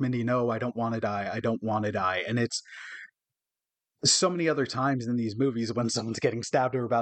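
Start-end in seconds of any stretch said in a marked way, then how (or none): 0.0-2.2 mock-pleading, imitated plea. Describing a movie scene where a girl breaks down, imitating pleading. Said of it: "she's pleading like".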